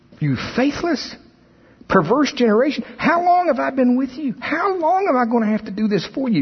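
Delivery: very high, angry, sharp voice. Acting out how he may have said the rebuke, mock-angry. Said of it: "I think there was anger in his voice".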